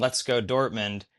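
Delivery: ordinary delivery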